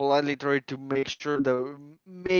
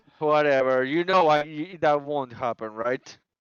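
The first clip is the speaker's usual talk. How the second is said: mocking, sarcastic, dismissive tone; 3 dB louder than usual. Voicing a character dismissing the player's stated goal: sarcastic. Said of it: "he says that sarcastically".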